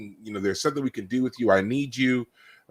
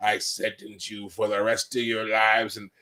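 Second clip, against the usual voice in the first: hardcore rough gravelly voice. Retelling a figure's sentencing line, in a hardcore gravelly voice. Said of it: "this really like hardcore gravelly voice when he's sentencing them".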